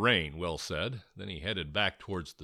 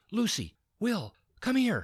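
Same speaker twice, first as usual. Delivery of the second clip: excited, eager whisper, much higher; 13 semitones higher than usual. Georgia calls Lucy and Will over to her in an excited whisper. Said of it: "she said in an excited whisper".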